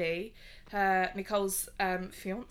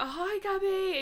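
mock drunk voice, higher pitch; 11 semitones higher than usual. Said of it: "drunk already".

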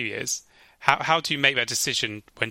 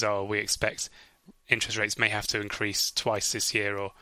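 usual speaking voice

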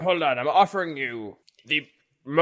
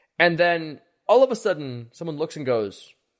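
ordinary delivery

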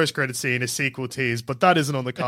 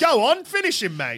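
fake Australian accent, very high pitched; 10 semitones higher than usual. Joking about a Mortal Kombat cast all doing Aussie accents: put-on Australian accent. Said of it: "everyone's doing Aussie ones".

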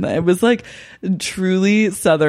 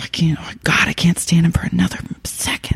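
imitated, put-on whisper. Retelling what Maggie said to Jane: whispering as Maggie. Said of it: "Maggie just starts whispering to her".

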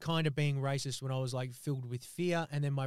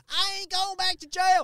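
shrill, very high, loud screaming; 8 dB louder than usual. Retelling a woman on a bench outside a club, retelling a woman's screaming. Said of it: "she's like screaming like".

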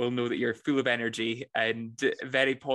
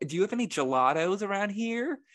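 put-on American accent, pitched higher; 9 semitones higher than usual. Recalling a hotel reception job, retelling an American guest's question: American accent. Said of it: "I'll do the accent".

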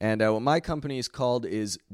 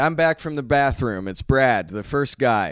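ordinary delivery

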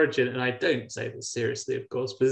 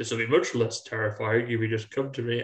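very low, put-on, goofy big-man voice. Retelling what someone said: really deep goofy voice. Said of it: "Like a really deep".

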